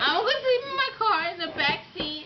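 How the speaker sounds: tearful, sobbing through the words. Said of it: "So why are you crying?".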